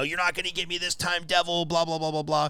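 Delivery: high, mild, ranting yell, held in check. Retelling what a man in a park bathroom screamed: imitating a man screaming. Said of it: "he's screaming".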